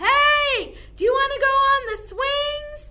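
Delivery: very high, very loud call, as if across distance. Demonstrating the voice for calling friends across a playground: calling voice. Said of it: "Our calling voice".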